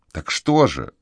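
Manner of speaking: plain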